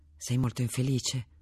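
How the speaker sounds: ordinary delivery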